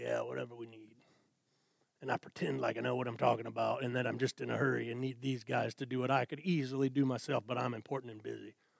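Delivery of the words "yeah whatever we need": hushed, very soft, faked deep voice. Retelling talking to the guys at an oil change: put-on deeper voice. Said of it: "I put on a deeper voice and I say".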